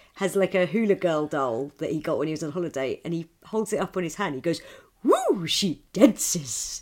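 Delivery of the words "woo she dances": swooping, pitch-swinging cartoon-character voice. Act out a man holding up his hula girl doll, in a proper Homer Simpson voice. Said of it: "in like proper Homer Simpson".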